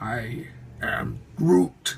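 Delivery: heavily emphasized, strongly hoarse voice. Unboxing a new figure and doing its line in a Groot voice. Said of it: "I can actually do that voice kind of a little bit better".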